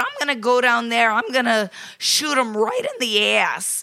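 put-on loud, outright New England accent. Retelling what a woman said to the police: New England accent. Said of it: "New England accent".

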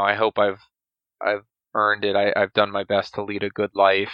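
ordinary talk

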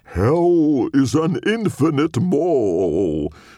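very high-pitched demonic character voice. Reading a story, narrator voices a character's line in his demon deal voice. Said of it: "in his best demon deal voice".

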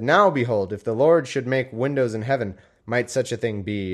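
normal talking voice

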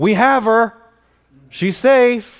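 shrill, very loud, very slow, drawn-out high shout. A man retells hearing his wife call out during a search for a missing girl: retelling his wife yelling. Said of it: "I hear my wife yelling".

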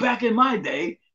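high, put-on old man voice. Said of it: "I sound like the old man that's like".

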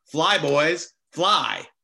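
mild mock yell. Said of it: "would literally yell out".

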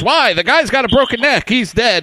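loud, shrill outburst, very high-pitched. Recalling his reply after being told to do CPR on the kid, retelling it loudly. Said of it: "he loudly goes".

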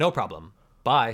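mock pleasant, friendly nice-fellow tone. Retelling how the doctor said goodbye as the elevator closed: imitating his goodbye tone. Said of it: "I just really wanna hit that tone".

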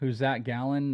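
ordinary talk

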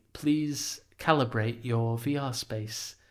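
laid-back, relaxed, very chill narrator voice. Recalling voicing a VR onboarding character: very chill guide voice. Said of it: "of the very chill".

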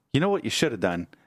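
needling, ribbing, teasing and mocking tone. Retelling how Bonnie mocks him at the table: imitating Bonnie's mocking tone. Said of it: "she's just mocking me".

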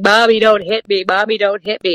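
acted screaming of a two-year-old toddler. Retelling how a two-year-old melted down in a pile, imitating a screaming toddler. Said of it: "she was screaming as a two-year-old".

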